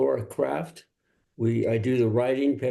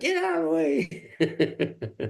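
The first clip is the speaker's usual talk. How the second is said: high, slow laughing mock yell. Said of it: "people will get out of their car and scream at you".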